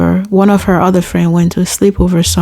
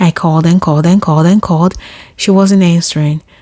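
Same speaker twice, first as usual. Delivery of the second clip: ordinary delivery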